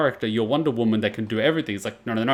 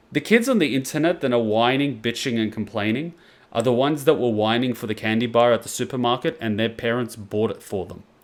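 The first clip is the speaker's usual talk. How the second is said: ordinary talk, nothing marked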